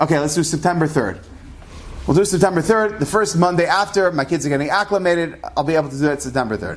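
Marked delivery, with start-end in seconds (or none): none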